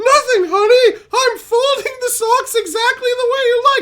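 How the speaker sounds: light, very high little put-on voice. Acting out a husband answering his wife in a skit: put-on light voice. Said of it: "you talk in that light voice".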